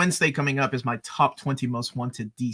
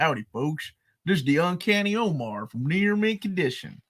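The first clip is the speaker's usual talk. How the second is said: put-on cowboy accent, pitched up; 5 semitones higher than usual. Performing the accent a chat viewer asked for, in a cowboy hat: put-on cowboy accent. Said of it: "Do it".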